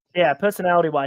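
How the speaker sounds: ordinary talk, nothing marked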